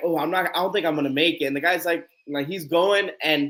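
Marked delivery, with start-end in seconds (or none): none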